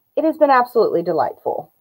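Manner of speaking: dripping with heavy sarcasm, swooping pitch. Speaker describing the upstairs neighbor's dogs being crate trained, sarcastic. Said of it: "I hope that you hear all of the sarcasm in my voice when I say that".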